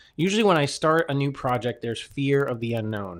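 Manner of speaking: usual speaking voice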